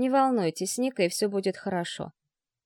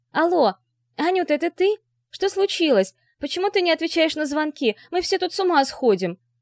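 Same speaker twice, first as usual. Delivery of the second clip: high, excited, relieved squealing, no calm left; 8 semitones higher, 4 dB louder than usual. A woman on speakerphone finally reaching someone who wasn't answering calls, squealing with relief. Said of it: "Радостное облегчение ... повизгивать очень даже получалось".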